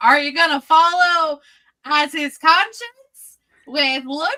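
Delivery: put-on yelling. Retelling a question yelled out during the game session: retelling a yelled question. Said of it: "yells out".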